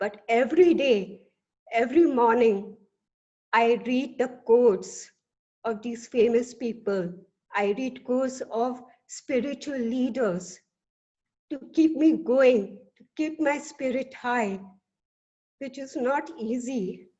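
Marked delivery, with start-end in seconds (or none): 7.5-17.0 emotional voice welling up, choking up. Addressing a Toastmasters meeting about keeping going, getting emotional. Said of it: "I'm getting emotional".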